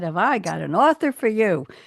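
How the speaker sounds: put-on natural New York accent coming through. Quoting a woman who pitched an author: New York accent. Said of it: "That's the New York accent coming through".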